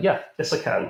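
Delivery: acted, high, panicked, flustered, far from calm. Retelling answering the man on the ground, imitating own panicked reply. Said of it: "Probably not delivered that calmly".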